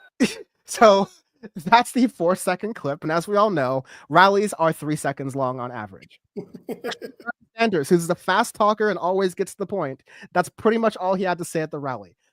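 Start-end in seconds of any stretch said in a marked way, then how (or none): 3.0-12.1 openly sarcastic tone. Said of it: "as you can tell, I'm being sarcastic".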